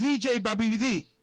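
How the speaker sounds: ordinary talk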